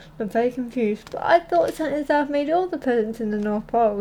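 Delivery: ordinary delivery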